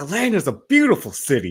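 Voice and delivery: very high, swooping, swinging announcer voice. Doing an impression of Will Ferrell's Harry Caray. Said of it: "I can only do Will Ferrell's Harry Caray".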